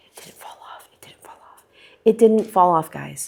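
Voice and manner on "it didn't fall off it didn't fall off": careful, hushed stage whisper. Showing a Hoya's flowers to viewers, whispering. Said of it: "I'm whispering because if I speak louder".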